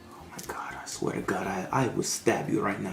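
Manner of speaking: very quiet mutter under the breath. Helping someone spell a word, muttering a threat under the breath. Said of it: "threatening him under his breath".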